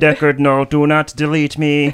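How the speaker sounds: stiff, flat robotic monotone voice. Asking to be in Blade Runner, speaker plays a replicant in a Blade Runner replicant robot voice. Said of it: "they speak like robots".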